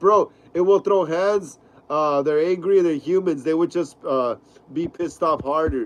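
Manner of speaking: ordinary talk, nothing marked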